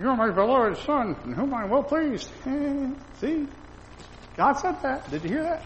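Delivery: high, mock ventriloquist voice, sarcastic.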